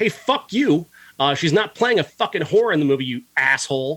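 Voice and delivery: heated, angry, profane cursing outburst. Ranting about a filmmaker who criticized a movie without seeing it; angry. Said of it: "I'm I'm getting angry".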